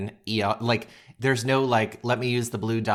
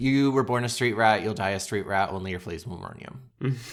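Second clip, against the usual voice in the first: plain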